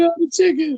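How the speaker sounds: very high, loud, mock yelling.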